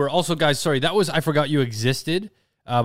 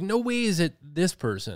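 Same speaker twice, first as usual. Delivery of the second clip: plain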